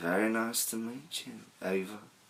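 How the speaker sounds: soft, put-on English accent. Retell how a tall red-haired man walked over and introduced himself, in an English accent. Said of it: "with an English accent".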